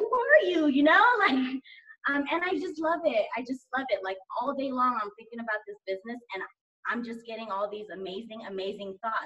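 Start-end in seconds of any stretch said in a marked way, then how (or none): 0.0-0.7 high, astonished, amazed tone. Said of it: "If I'm like".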